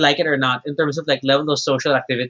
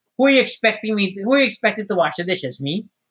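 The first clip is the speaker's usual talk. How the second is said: put-on parent voice with a scolding tone; 5 semitones higher than usual. Retelling how dishes in the sink sound to them: mother's voice. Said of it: "I hear the dishes in my mother's voice".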